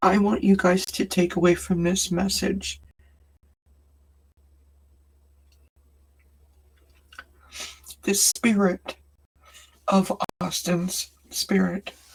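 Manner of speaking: crying while talking, tearful voice. Sharing a message about missing Austin, crying while talking. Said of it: "despite the fact that I'm crying".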